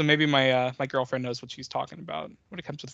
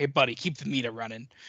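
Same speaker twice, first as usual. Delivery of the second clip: put-on complaining tone. Retelling a movie scene where a character complains: imitating him complaining. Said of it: "complaining, and he's like".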